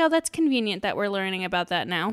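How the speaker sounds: ordinary delivery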